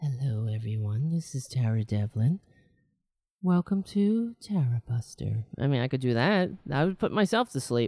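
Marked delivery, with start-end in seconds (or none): 0.0-5.4 low, soothing radio voice, easing in gently. Host showing how he would sound doing NPR, soothing NPR voice. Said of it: "That's a soothing voice".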